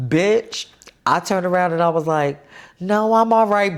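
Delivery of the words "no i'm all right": put-on female-sounding voice, higher pitch. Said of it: "I thought I sounded like her".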